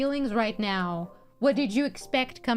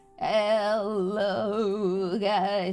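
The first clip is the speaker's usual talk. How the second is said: put-on metallic, fan-distorted old lady voice, drawn-out hello. Showing chat how speaking through the fan will sound: voice like an old lady. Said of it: "That's how I'm gonna sound. Like an old lady".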